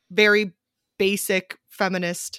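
ordinary delivery

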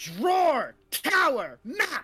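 loud, high-pitched shout, words yelled one by one. Calling out to another character from a distance: shouting. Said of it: "I'm going to shout".

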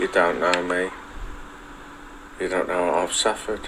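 sudden loud, eerie, creepy tone shift. A streamer, after wasting time in the game, shifts to a creepy tone. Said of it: "He went to like a creepy".

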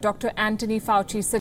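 Malaysian accent. Showing how a name sounds when said in a Malaysian accent. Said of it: "if you say it in like in a Malaysian accent".

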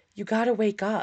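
put-on whisper. Retelling a voice heard while falling asleep: imitating a whisper. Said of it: "I hear a whisper in my ear going".

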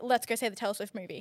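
ordinary talk, nothing marked

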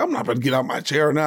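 ordinary talk, nothing marked

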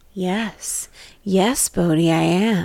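mock very slow, strange, seductive come-hither voice. Retelling how the creepy voice in The Well spoke: imitating a weird seductive voice. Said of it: "In this, like, weird, seductive voice".

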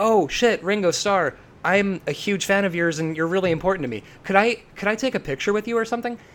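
put-on high, gushing, babbling little-kid voice. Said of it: "sort of babbling in a little kid voice".

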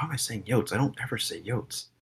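mumbling under the breath. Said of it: "I keep catching myself being like".

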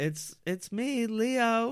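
very high, drawn-out voice. Voicing a dead body like a ventriloquist dummy: high-pitched Leo voice. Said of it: "Does Leo have a high-pitched voice?".

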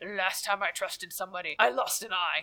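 badly faked, put-on male voice. Quoting a movie line in a really bad male imitation voice. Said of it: "in my really bad male imitation voice".

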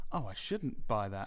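ordinary talk

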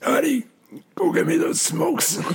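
very high, hardcore chain-smoking grandma voice. Working out how goblins should sound, trying one out: old chain-smoking grandma voice. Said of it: "that old hardcore grandma that's just been smoking".

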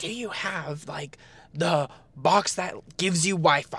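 very slow yelling, every word drawn out and spelled out. Retelling a question shouted about the wi-fi box: imitating dad yelling. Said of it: "my dad yelled at me and was like".

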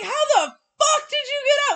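mock, shrill, shrieking, very high, loud yell. Retelling finding the bird loose: retelling a yell. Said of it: "I'm yelling".

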